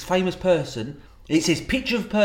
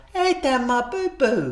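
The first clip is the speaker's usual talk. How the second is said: put-on babyish voice, much higher pitch; 9 semitones higher than usual. Describing what they say walking into the kitchen, in a baby voice. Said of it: "I'm like a little baby, I am".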